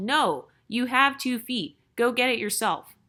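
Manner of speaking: ordinary talk, nothing marked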